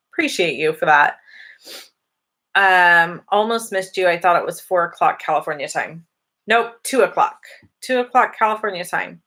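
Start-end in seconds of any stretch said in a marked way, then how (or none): none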